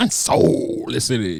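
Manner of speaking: emphatic announcer voice with heavy stress on "soul". Imitating the other speaker's show intro, stressing the "soul" in "Unsolicited". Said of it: "you really emphasize the soul".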